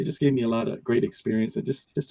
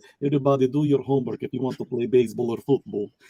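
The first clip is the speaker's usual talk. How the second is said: put-on fatherly dad voice with Russian accent. Recalling childhood visits to a Russian friend's house, imitating the friend's dad. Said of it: "I would imitate like his dad".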